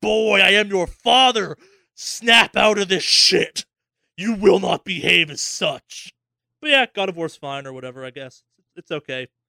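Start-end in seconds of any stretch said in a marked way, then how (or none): 0.0-6.1 loud, slow, heavy, stern booming delivery. Imagining what Kratos should say when telling the kid off: Kratos voice. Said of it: "I wanted Kratos to be like".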